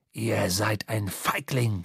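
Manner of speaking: hissed, very low-pitched voice. Narrator voicing the seafarer as the helmsman advances with a rope, hissing. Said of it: "zischte der Seefahrer".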